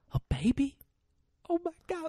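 very high, swooping, overjoyed, near-tears voice. Retelling a film ending where a man learns of a baby: imitating Matthew McConaughey about to cry. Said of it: "like he's gonna cry".

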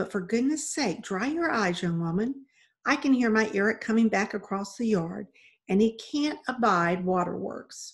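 ordinary delivery

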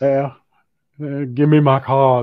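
put-on Austrian accent, loud. Reading out someone's comment about carbs, in an Arnold accent. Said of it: "Why did I give him an Arnold accent?".

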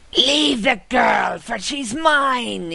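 high hiss with mine drawn out. A game master voices the vampire lunging at the players: hissing as Viscount Freyek. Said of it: "he hisses".

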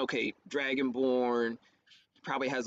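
ordinary delivery

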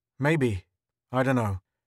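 ordinary delivery, nothing marked

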